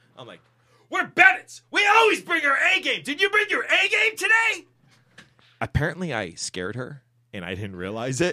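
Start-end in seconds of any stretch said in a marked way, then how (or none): 0.9-4.7 very high, full-blast, really loud cry. A dad retells what he asked his kid: retelling saying it really loud. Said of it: "because I say it really loud".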